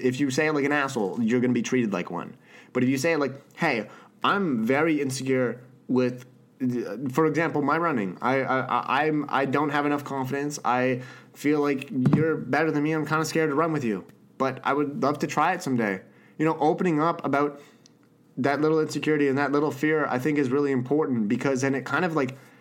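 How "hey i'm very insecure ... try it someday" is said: plain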